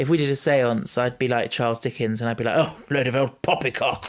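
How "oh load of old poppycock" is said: put-on snobby, old-fashioned voice, slower pace. Imagining doing a seance, the speaker slips into a snobby old-worldly Charles Dickens voice. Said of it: "the snobby, old worldy voice".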